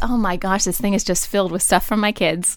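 ordinary delivery

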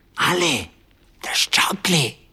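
loud, carrying stage whisper. Narrator reads a man carrying two mugs calling to ale, loud whisper. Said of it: "he said in a loud whisper".

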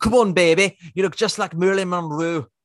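bad put-on Liverpool accent. Imitating a husband sweet-talking his wife in a Liverpool accent. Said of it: "That's a terrible Liverpoolian".

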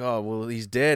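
normal talking voice

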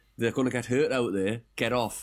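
ordinary delivery

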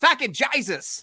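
put-on Australian accent. Sharing a favorite thing to say in an australian accent. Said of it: "my favorite thing to say in Australian accent".

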